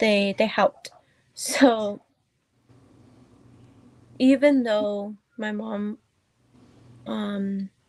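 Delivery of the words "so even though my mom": very slow, fighting back tears. Talking about being raised by grandparents, holding back tears. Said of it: "sorry, trying not to cry".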